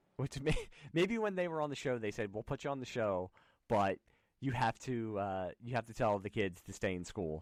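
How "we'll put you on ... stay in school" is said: ordinary delivery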